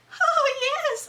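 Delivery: very high, loud, shrill falsetto with laughter. Retelling how a woman voiced another woman, in a high falsetto voice. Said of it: "she put on like this high falsetto voice".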